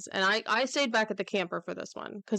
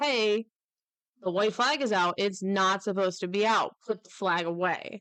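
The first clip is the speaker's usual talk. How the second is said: ordinary delivery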